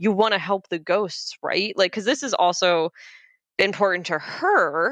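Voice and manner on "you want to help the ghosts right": mock forceful, angry delivery. Retelling a character confronting her uncle: imitating a forceful, angry line. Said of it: "she just very forcefully says that".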